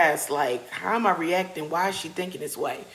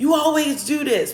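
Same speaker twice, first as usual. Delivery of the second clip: put-on play-acted child voice, high, loud, defiant shouting; 9 semitones higher, 6 dB louder than usual. Retelling a quarrel over a phone with a child: imitating a child yelling. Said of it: "And she's yelling".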